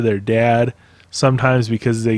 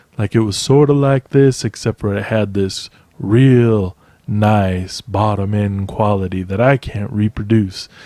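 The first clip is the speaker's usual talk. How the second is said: put-on lower voice, trying to sound deep; 2 semitones lower than usual. Describing a voice he once heard, the speaker demonstrates it in a deeper voice. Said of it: "I'm trying to do a deeper voice than I have".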